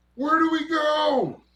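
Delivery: very high, very loud, shrill, frantic panicked scream. Narrator voicing privates hanging off the side of a truck, screaming.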